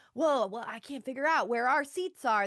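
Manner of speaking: mock loud, theatrical stage-projecting voice. Complaining about people loudly looking for their seats; mock loud stage projecting. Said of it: "really projecting".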